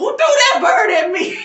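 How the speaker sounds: put-on angry yelling. Remembering the listener's mother, retelling her angry yell. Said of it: "real mad, and yells".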